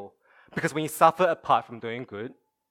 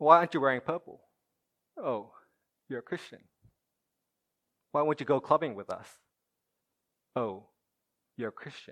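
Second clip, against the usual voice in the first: mock condescending tone. Imagining how others react to believers: imitating a condescending tone. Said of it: "condescending tone bearing upon us".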